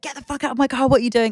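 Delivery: put-on, mild angry shout. Retelling how the driver threw a man out of the car: imitating someone shouting. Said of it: "shouting at this guy".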